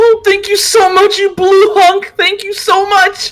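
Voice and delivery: very high, loud, grateful calling voice. Voicing a character thanking another who steps forward: calling out in gratitude. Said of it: "Maze calls out".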